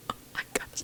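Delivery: soft, unvoiced whisper, under the breath.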